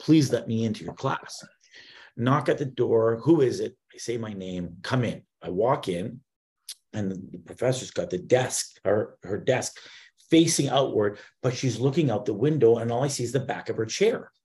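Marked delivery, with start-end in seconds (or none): 0.0-1.4 imploring, begging, pleading tone. Retelling asking a professor you haven't met to let you into her class, acting out pleading. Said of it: "to beg and plead with this person".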